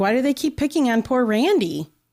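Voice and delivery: dripping, obvious sarcastic tone. Commenting while another speaker tells a crime story: sarcastic. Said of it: "I'm being sarcastic".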